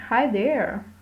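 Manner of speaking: playful, slightly teasing tone. Lesson on English greetings, saying hi there slightly teasing. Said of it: "इसको थोड़ा टीजिंग manner में बोल सकते हैं, जैसे कि".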